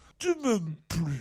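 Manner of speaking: play-acted ashamed, disappointed intonation, low and crestfallen. Recounting the lady with the plastic bag at the end, imitating her crestfallen disappointment. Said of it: "dans l'intonation de la déconvenue de la dame".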